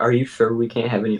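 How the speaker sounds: hushed whisper. In a role-play scene, a character presses for more, whispering. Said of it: "I'm whispering again".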